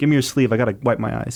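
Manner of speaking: put-on tearful, weeping voice. Host introducing the podcast's final episode: mock crying. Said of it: "Stop crying".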